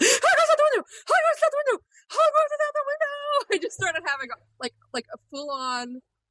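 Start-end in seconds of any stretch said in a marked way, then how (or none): 0.0-3.5 put-on, very high, childlike shriek. Recalling opening the window on a business trip to see Hogwarts: retelling a childlike scream. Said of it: "screaming like a tiny little child".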